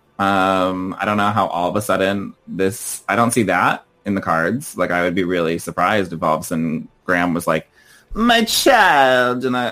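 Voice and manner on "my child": put-on high accidental Italian accent, "child" drawn out. Imagining how Graham would speak: put-on Italian-sounding voice. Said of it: "that was my voice, but I think I came out Italian".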